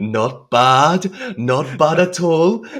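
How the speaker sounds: smug voice, high and slow.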